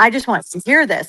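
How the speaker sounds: excited-sounding speech. Retelling a business partner's words on a FaceTime call: imitating someone excited. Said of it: "he was so excited".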